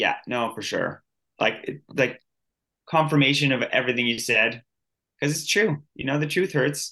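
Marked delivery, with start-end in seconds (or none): 0.0-1.0 mock deadpan delivery, slower. Speaker acts out another person's reaction, retelling a deadpan reply. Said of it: "he's just like deadpanning".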